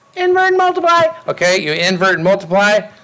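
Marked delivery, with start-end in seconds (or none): 0.2-1.1 shrill little squeak, very high pitched. Speaker answers their own question about dividing fractions for the students, high squeaky voice. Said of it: "I like to do the high squeaky voice".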